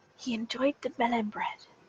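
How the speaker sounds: secretive, conspiratorial half-whisper, very hushed. Narrating a character leaning over to speak, in a conspiratorial half-whisper. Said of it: "in a conspiratorial whisper".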